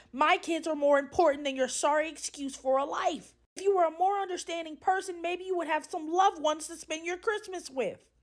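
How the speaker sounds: restrained mild yell. Retelling what a coworker said in the break room, imitating her yelling. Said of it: "She starts to yell at the top of her lungs".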